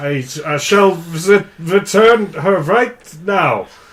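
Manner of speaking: poor put-on German accent. Playing a character in a comedy scene, in a terrible German accent. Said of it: "so I have to do a terrible German accent".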